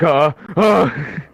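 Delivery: high, loud flustered stammering.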